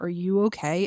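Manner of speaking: ordinary delivery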